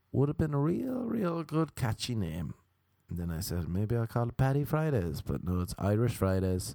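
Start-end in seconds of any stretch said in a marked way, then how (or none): none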